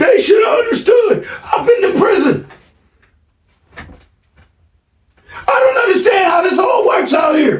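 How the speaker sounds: very high screaming shout. Retelling an argument with his son: imitating his son yelling. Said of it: "he's standing there yelling and screaming".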